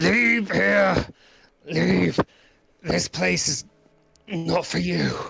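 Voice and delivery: gruff voice, rough and high-pitched. A voice calls out from behind a stalagmite at approaching adventurers, in a gruff voice. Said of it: "a gruff sort of voice shoot out".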